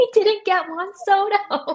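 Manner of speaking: put-on, high, tearful voice crying through the words. Retelling how the same news night felt from the other side: retelling own crying.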